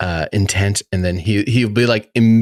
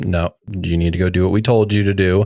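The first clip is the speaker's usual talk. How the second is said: plain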